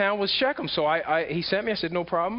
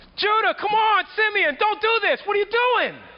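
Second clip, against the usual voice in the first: very high, loud, top-of-the-lungs screaming; 7 dB louder than usual. Retelling being thrown into a cistern by his brothers: retelling screaming at top of lungs. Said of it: "I was screaming at the top of my lungs".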